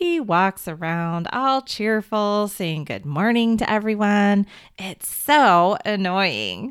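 dry, dripping sarcasm, complaining tone. Retelling a story, the speaker quotes a brother's complaint in a mock-sarcastic tone. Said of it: "in this sarcastic tone".

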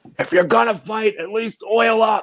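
put-on drunk man's scream. Retelling what a drunk guy in a bar yelled: imitating a drunk guy screaming. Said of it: "he just screams".

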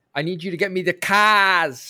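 put-on over-the-top, loud South London accent, "cars" stretched long. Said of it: "his mouth would get as wide as possible".

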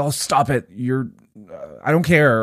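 hostile, harsh, aggressive tone. Showing how one person had to respond to their partner, aggressive, harsh tone. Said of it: "respond to whatever your version of the clouds is in a aggressive way".

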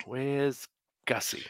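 put-on slow, soft drunken voice.

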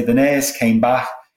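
strong, broad Liverpool (Scouse) accent. Explaining accents, the speaker shows how a broad Liverpudlian says a sentence, broad Liverpool accent. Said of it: "a broad Liverpudlian might say".

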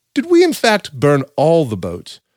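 bad put-on voice, pitch swinging all over. Acting out Cortez questioning his second-in-command: John Cleese voice. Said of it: "or a bad impression of John Cleese".

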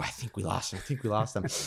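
quiet, hushed voice.

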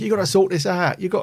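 put-on Cockney accent, shouted.

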